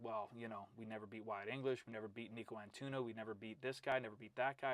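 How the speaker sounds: ordinary delivery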